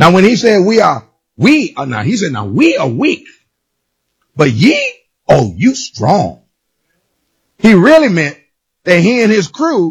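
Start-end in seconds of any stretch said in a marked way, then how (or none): 2.3-6.4 mocking, sarcastic delivery, low and swooping. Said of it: "he started talking sarcastically to him".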